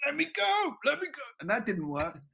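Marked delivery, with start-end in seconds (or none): 0.0-1.2 put-on very high scream, repeated over and over. Retelling screaming at a parachute while hanging upside down: retelling a scream. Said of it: "I just start screaming at the parachute".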